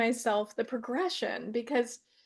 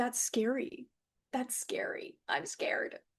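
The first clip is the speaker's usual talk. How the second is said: tiny, little, hushed, breathy mousy whisper; 6 dB quieter than usual. Recalling her younger self in the background of a recording, she speaks in a little mousy voice. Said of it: "this like a little mousy voice".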